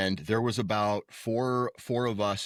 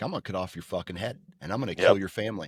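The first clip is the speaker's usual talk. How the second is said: fake, mock-serious movie mobster voice. Describing someone's humor, act out a movie mobster's threat: mock-serious movie mobster threat. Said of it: "like a mobster in the mobster movies where they are just real serious".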